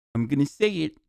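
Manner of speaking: put-on giddy, gleeful, showing-off twelve-year-old voice. Mocking someone as a twelve-year-old who just learned a bad word: imitating a twelve-year-old saying a bad word. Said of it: "like a twelve-year-old who just learned a bad word".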